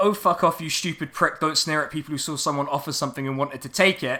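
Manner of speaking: ordinary talk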